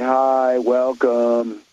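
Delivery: mock bored, unmotivated young person's drawl. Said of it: "has no motivation and is at the desk say".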